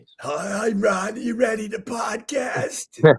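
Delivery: scratchy, raspy, just-woken-up sounding voice. Telling how your co-host calls you in the morning, do Opie's raspy voice. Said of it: "with his, you know, raspy voice".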